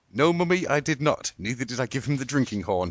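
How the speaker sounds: cheerful, carefree, merry tone. Retelling own reply to Amy while skipping away: imitating a merry reply. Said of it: "as I skipped away merrily".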